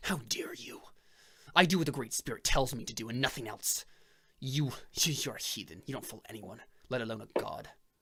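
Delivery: words forced out through gritted, clenched teeth. Narrating a character who turns around to answer, speaking through clenched teeth. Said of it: "he turns around with clenched teeth".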